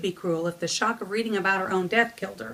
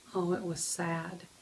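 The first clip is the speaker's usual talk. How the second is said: ordinary delivery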